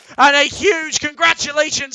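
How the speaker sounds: voice breaking and cracking on "congratulations". Commentating a match and congratulating the winning team, voice cracking. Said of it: "excuse me for the voice crack".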